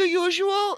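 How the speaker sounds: very high Hawaiian lady voice. Retelling the drive-thru worker's reply, imitating a Hawaiian lady. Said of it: "she was like a Hawaiian lady".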